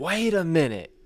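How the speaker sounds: loud, high-pitched yelling. Retelling a feed store customer yelling at the boss: imitating a customer yelling. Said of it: "yelled at him".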